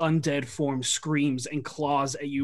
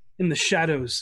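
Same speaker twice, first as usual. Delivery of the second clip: ordinary talk, nothing marked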